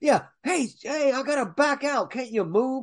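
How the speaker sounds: put-on yelling in a very high-pitched voice. Retelling a movie scene where everyone is yelling: imitating people yelling. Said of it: "Everyone's yelling".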